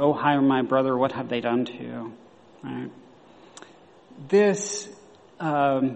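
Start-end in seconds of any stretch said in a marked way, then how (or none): none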